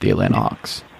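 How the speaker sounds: whispered softly under the breath. Sharing a prediction with the other speaker: whispered. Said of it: "I'm going to whisper this one".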